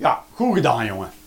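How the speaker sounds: low, sarcastic, ironic delivery meaning the opposite. Parent showing how they speak sarcastically to their child, with sarcastic praise. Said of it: "Maar ik gebruik heel veel sarcasme".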